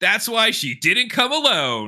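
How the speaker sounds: piping, very high, awful bad-acting line read. Quoting a scene's line to mock it: imitating awful line delivery. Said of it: "his delivery here is awful".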